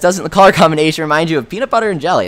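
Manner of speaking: ordinary talk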